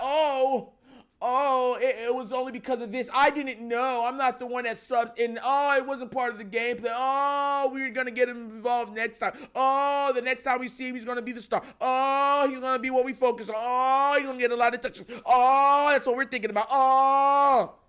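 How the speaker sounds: acted-out sarcastic tone, long drawn-out "oh". Retelling how the team explains not using the player: imitating the team's excuses. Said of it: "they come out and be like".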